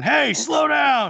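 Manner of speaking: put-on loud, grumpy old-man voice, hollering. Teasing about the pandemic, acting an old guy yelling at cars: mock old guy yelling. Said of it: "that old guy sitting on the porch yelling at cars".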